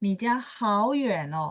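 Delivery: ordinary talk, nothing marked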